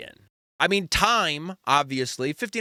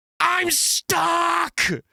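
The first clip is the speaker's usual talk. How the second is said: mock shrill, raspy, very high toddler screaming; 3 dB louder than usual. Retelling a small child on a plane: imitating a child screaming. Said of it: "starts screaming".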